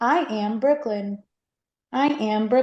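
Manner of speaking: robotic voice. Introducing oneself on the show again and again: robot voice. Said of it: "Now you sound like a robot".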